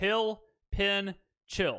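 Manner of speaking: genuine Southern Mississippi accent. A speaker demonstrates how these words are said in Mississippi; Mississippi Southern accent. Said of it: "that's how you actually say those words".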